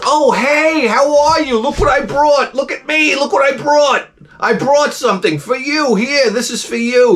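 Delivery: acted out, very high-pitched, proud, showy bragging tone. Retelling arriving at a party with beer for the hosts: imitating himself showing off. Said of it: "make myself look like a great guy that brought something".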